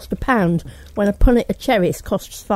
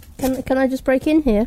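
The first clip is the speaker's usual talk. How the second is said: plain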